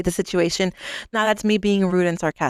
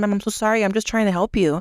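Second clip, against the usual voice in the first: acted calm, polite, respectful, unraised voice. Speaker at a counter retelling what they told a customer, retelling a polite apology. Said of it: "I didn't raise my voice".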